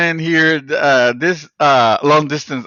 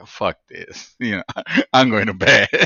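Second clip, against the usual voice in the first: mock defeated voice, lower pitch; 7 semitones lower than usual. Retelling how the other speaker sounded after losing the recording: imitating a defeated tone. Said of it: "just defeated tone".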